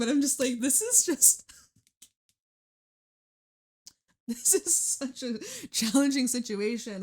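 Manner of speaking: speech broken up by laughter. Reading tarot cards for Sagittarius, laughing while talking. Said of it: "I'm sorry I'm laughing".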